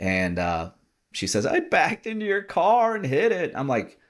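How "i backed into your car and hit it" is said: mock sobbing through words, very high, tearful. Retelling what the wife said after backing into the car: imitating someone crying. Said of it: "she's just a mess crying".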